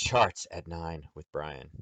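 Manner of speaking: hushed, announcing late-night radio DJ voice. Announcing an upcoming event to the room, in a late-night dj voice. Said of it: "Late night D J voice".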